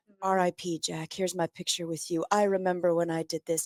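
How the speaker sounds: mock attention-seeking voice. Imitating people posting pictures with a dead celebrity: mocking social media posters. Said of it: "people who are gonna start posting their pictures with Jack".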